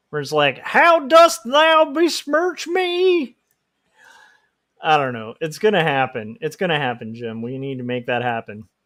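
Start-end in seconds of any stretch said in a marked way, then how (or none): 0.6-3.4 hardcore Southern accent, slow, pitched very high. Pitching a western where everyone speaks shakespearean english, in a hardcore southern accent. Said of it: "hardcore Southern accents".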